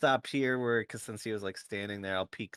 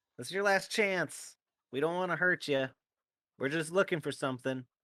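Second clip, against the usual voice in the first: high, loud shout called out to be heard; 7 semitones higher than usual. Player character in a tabletop game calls out to a goblin, shouting out. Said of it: "I'll I'll shout out".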